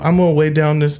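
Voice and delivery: put-on little boy voice. Imitating how Chris Angel talks: Chris Angel little boy accent. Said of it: "It's a little boy accent".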